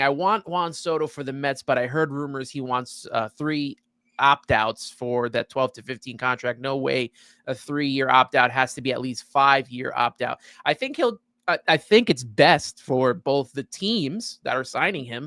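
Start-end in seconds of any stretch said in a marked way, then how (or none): none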